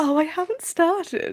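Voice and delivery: put-on posh accent. The speaker repeats their earlier line to show how it sounded: posh-sounding voice. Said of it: "I don't know if I could say that without sounding posh".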